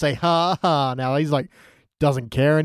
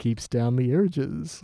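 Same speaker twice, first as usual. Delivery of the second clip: put-on confiding voice, quieter; 5 dB quieter than usual. Imitating how Ned delivers a line: Ned's here's-a-sex-tip voice. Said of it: ""Oh, here's a sex tip" kind of voice".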